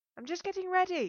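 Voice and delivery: shrill, very high, loud irritated call. Calling back to someone outside the door while getting ready, irritated.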